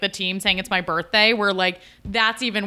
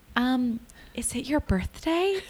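slow, hushed, half-whispered delivery; 4 semitones higher, 5 dB quieter than usual. Retelling a guy from the team asking if it's a birthday: imitating someone whispering. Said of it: "kind of whispers it".

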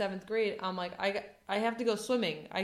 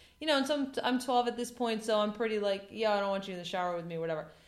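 normal talking voice

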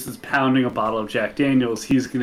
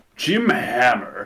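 self-assured, voice sinking deeper and lower throughout. Retelling a man giving his name in a newspaper interview, imitating Jim Hammer's deepening voice. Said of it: "his voice gets deeper as he's saying it".

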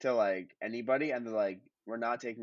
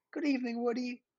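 very high, genteel, polite put-on Southern twang; 14 semitones higher than usual. Imagining a polite character greeting Woody as he walks by, polite southern twang. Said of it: "like kind of like a southern twang accent too".

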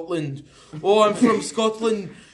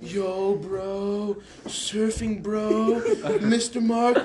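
put-on California surfer-dude accent, drawn-out; 3 dB quieter than usual. Starting an impressions-around-the-world game in California, California surfer dude accent. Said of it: "let's start from California".

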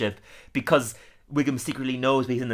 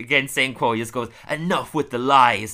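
ordinary talk, nothing marked

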